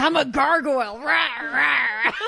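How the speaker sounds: playful growling monster voice. Recalling crouching on a school wall as people walked by, growling gargoyle voice. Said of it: "I start growling".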